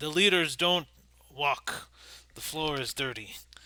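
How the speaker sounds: improvised, made-up creature voice. Voicing Girder, a giant pillar creature carrying a player: improvised creature voice. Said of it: "I forget what voice I used, but I'm just gonna wing it".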